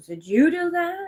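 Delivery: high, slow, suspicious accusing tone. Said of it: "My sister goes".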